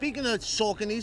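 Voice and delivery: normal talking voice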